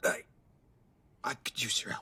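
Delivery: very quiet, hushed, breathy, halting mumble. Asking someone for help, mumbling. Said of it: "You're mumbling".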